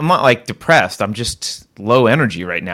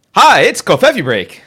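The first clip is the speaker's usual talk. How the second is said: forced, put-on upbeat peppy voice, very high pitch; 9 semitones higher, 5 dB louder than usual. Host who just admitted being in a funk opens the show: forced peppy greeting. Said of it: "I'll be more peppy".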